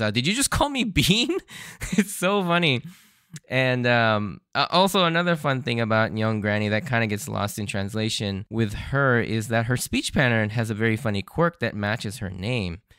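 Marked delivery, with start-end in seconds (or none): 0.1-1.4 indignant, high-pitched angry yell. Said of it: "she angrily yells out".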